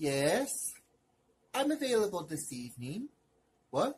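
put-on soft, posh, fancy hotel receptionist voice. Hotel receptionist taking a phone call from Dolores, in a fancy receptionist voice.

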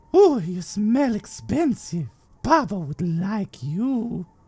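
very high, gleeful, cackling creature voice. A horned creature sniffs at a stunned noble, cackling creature voice. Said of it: "He cackles".

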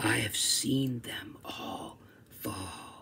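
very quiet, slow, breathy, hushed whisper. Reading the angel speaking to Brady in the story, whispered. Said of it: "whispered the angel in bells and chimes".

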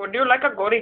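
put-on Indian accent. Running through accent bits, each announced by name, in a put-on indian accent.

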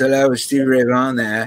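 put-on English accent. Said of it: "this English accented voice says".

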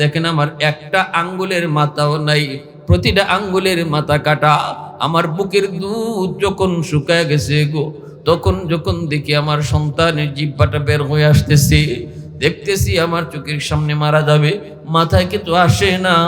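plain

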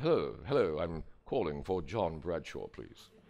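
put-on low, unhurried British accent. Retelling a phone call from a man asking for him, in a British accent. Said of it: "a man with a delightfully British accent called me".

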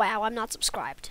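ordinary delivery

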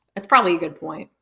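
play-acted dry, matter-of-fact, expressionless deadpan. Retelling how a woman turned to the speaker and answered, retelling a deadpan reply. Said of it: "she deadpan turns to me and she goes".

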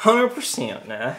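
put-on rodeo-boy Texan drawl. Joking about having grown up a Texas rodeo boy: put-on Texas rodeo accent. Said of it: "He would have sounded like that too".

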